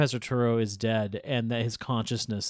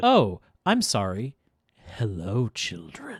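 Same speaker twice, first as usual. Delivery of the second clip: put-on civil, polite professor voice. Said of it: "he did a more civil tone".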